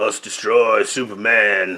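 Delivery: put-on undead zombie monster voice with Cajun accent. Describing a cartoon episode, quoting the villain, as Solomon Grundy with Cajun accent. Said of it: "he's got like that Cajun accent on it".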